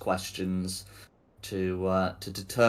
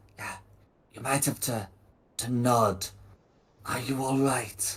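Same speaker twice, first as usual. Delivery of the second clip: whispering, higher pitch; 4 semitones higher than usual. Voicing a character who whispers again and asks them to nod: whispering. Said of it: "will try whispering again".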